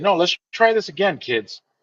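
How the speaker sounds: mock bewildered, puzzled, confused host voice. Retelling a children's show bit, imitating someone confused. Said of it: "He would look confused".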